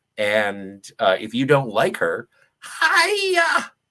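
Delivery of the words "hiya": bad high, swooping put-on voice, stretched-out "hiya". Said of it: "That was a terrible Miss Piggy impression".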